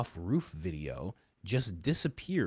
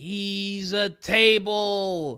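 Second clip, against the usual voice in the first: very loud, very high shrill outraged scream, long "he's"; 11 semitones higher, 9 dB louder than usual. Recounting a dramatic group scene, retelling Erica's yell. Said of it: "And Erica yells".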